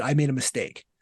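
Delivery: ordinary delivery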